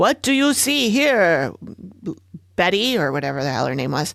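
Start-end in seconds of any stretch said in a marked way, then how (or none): 0.0-3.0 heavy, thick, put-on German accent. Retelling an old tape of a man questioning a spooky woman: big german accent. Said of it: "in his big German accent".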